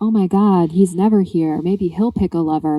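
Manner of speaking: imitated whispering. Retelling how everyone gossips as the crown prince shows up: imitating whispering. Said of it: "everyone's whispering".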